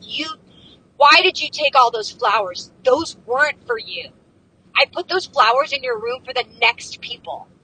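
high, loud, mock-furious scolding tirade. Retelling a woman who starts unloading on the speaker, mock-angry rant. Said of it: "She's so angry".

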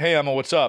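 usual speaking voice

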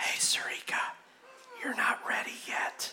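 very quiet, breathy, hushed whisper. Voicing the evil one tempting a listener: whispering as the evil one. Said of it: "The evil one whispers in your ears things like this".

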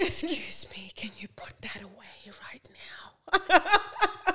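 very slow, angry, furious whisper. Retelling scolding the kids when really pissed off: imitating an angry whisper. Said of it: "And start whispering".

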